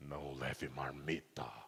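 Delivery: very deep, very quiet, hushed demon voice. Joking about how the devil would talk, in a put-on devil voice. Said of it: "Fiz bem a voz do diabo?".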